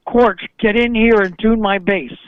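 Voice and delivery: ordinary talk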